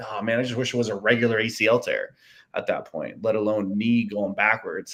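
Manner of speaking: ordinary talk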